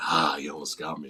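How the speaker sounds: low pitch, slow pace, words drawn out. Retelling the villain's reply after a long pause: imitating the Joker. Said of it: "that's when Joker's like".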